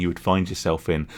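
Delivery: normal talking voice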